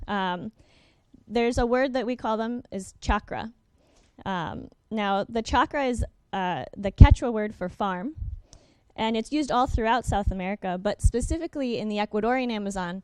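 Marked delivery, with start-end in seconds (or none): 10.8-13.0 rushed, fast lecturing pace. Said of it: "I'm speaking too fast".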